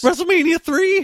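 sheer disbelief, voice shooting very high, incredulous. Questioning the other speaker's claim about WrestleMania three: incredulous voice. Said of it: "Can you hear the fucking incredulence in my voice?".

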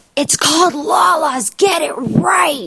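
play-acted, very high, dragged-out holler. Retelling a date's outburst at a restaurant mention: imitating Brian shouting.

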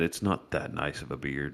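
muttered under breath. As another character walks past, a player's character remarks under his breath. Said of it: "kind of under his breath".

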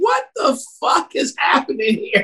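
high-pitched yelping scream. Recalling watching a police scene on tv, retelling screaming at the tv. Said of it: "I'm sitting there screaming at the TV".

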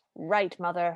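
acted conspiratorial manner. Retelling Red answering her stepmother, acting conspiratorial. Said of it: "very conspiratorially".

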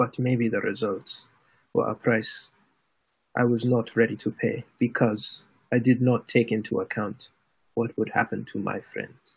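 toughened delivery. Voicing a character answering a friend's rebuke at the table: toughened demeanor. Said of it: "he toughens his demeanor again, and he goes".

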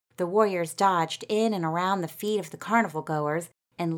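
ordinary delivery

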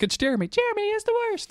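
put-on cute, very high, sing-song British child accent. Imitating someone's young kid on the microphone, in a cute little British accent. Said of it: "in the little British cute accent".

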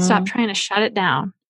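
normal talking voice

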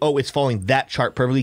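ordinary talk

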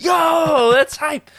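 loud, thrilled, high-pitched shouting.

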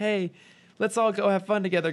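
high, earnest, heartfelt, sincere tone. Describing a middle-space type, acting out a line: mock earnest tone.

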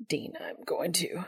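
tense, strained voice. Reading fiction aloud, voicing a character's line: strained voice. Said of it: "in a strained voice".

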